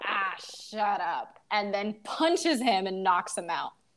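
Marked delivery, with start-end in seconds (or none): 0.0-1.4 sexy leading-man voice, tossed off, dismissive.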